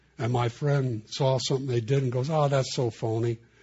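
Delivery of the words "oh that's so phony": normal talking voice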